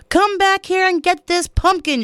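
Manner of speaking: very high, shrill, loud yell. [name] calling after the truck driver, yelled. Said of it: "she yelled".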